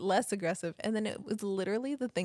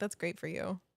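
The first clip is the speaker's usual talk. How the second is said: put-on condescending tone, quieter; 4 dB quieter than usual. Retelling a rude text reply, imitating a condescending tone. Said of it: "Why did that sound so con-, condescending?".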